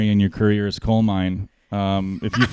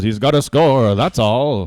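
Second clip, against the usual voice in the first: put-on old-time sports announcer voice; 2 semitones higher than usual. Retelling a shootout call by a hockey announcer: Bob Cole impression. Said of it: "And Bob Cole just goes".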